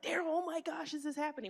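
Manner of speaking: acted-out, high, upset yelling. Retelling an upset phone call: imitating own past yelling.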